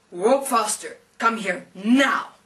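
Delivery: big, loud, booming heavenly voice from on high. Telling a story, speaker voices a huge angel at the gates, big voice from above. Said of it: "there's a big voice speaking from above".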